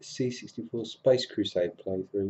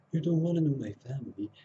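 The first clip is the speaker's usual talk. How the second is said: gentle soft-spoken put-on voice; 4 semitones higher than usual. Discussing an actor's earlier film roles, imitating his soft-spoken voice. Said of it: "He's very soft spoken in the earlier ones".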